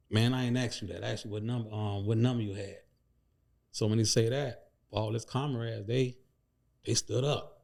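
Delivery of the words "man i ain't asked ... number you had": ordinary delivery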